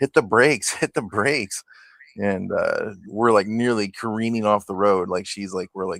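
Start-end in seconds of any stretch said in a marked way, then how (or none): 0.0-1.6 panicked, urgent, repeated yell, acted out. Passenger retelling yelling at the driver taking a turn too fast, retelling a yell. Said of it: "I started yelling at her".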